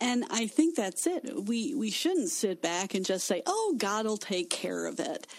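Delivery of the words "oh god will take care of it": usual speaking voice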